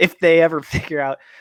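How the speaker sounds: laughing through the words.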